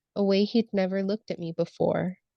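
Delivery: normal talking voice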